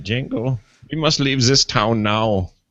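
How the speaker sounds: put-on slow, deliberate, unhurried German accent. Imagining an actor talking to the dog: Christoph Waltz impression. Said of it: "it's Christoph Waltz talking to your dog".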